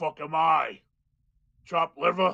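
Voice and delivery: loud, indignant, affronted dwarf bellow. Voicing a dwarf prisoner calling from a cell: indignant dwarf prisoner voice. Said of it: "you just hear a voice come out like".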